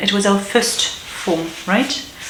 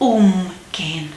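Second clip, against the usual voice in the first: prefix um stressed in the word umgehen. Repeating umgehen back and forth with another speaker, stress on prefix um. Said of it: "The stress is on the prefix".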